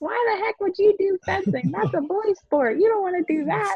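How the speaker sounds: put-on very high, disapproving grandmother voice. Retelling her grandmother's reaction to her plan, doing a grandma impression. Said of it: "Such a good grandma impression right there".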